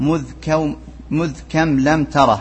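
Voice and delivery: normal talking voice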